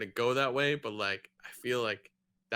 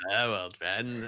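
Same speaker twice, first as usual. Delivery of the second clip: bad put-on old man voice, lower; 4 semitones lower than usual. Joking about a bad imitation: worst Alec Guinness imitation. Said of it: "the worst, uh, Alec Guinness, like, imitation ever".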